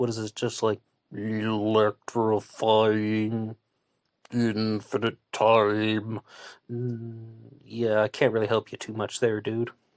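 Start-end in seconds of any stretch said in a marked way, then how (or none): 1.1-6.2 very slow, mock robotic computer voice. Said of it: "You really think that this is a computer voice?".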